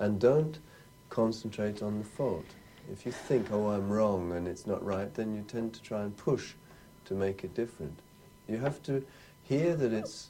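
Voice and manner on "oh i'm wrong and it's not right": plain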